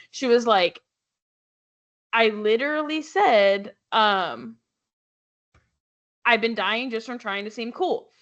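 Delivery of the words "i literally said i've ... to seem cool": ordinary talk, nothing marked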